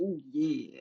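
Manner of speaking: acted mascot character voice. Imagining someone bursting into the room: Kool-Aid Man voice. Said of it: "busting in like the Kool-Aid Man".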